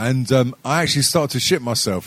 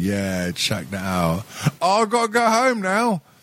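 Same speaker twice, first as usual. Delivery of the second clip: cool, casual, boastful, unbothered tone, high and swooping; 5 semitones higher than usual. Retelling acting cool while looking everyone straight in the eye: imitating own cool act. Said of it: "I had to remain cool".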